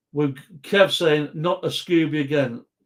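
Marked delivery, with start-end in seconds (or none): none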